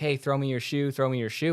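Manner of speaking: put-on yelling voice. Recounting a race, the speaker re-enacts calling out to Clark, retelling a yell. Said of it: "I'm yelling like".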